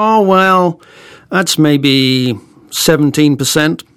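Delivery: badly done fake American accent. Retelling the reply someone gave to a question, in a bad American accent. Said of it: "with apologies for my appalling American accent".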